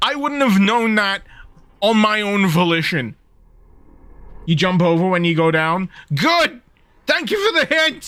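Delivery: anxious, loud yelling. Talking back to a hint while playing through a tense section, anxious yelling. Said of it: "I'm sorry I'm yelling".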